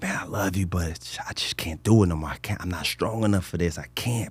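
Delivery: put-on tearful speech. The speaker retells what he said while looking down at him: retelling tearful words. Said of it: "And so I'm crying".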